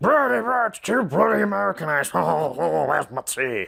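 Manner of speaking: rough, creaky put-on caricature voice. Mocking fans who call the episode too Americanized: impression of Railway Series fanatics. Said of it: "that's my impression of you Railway series fanatics".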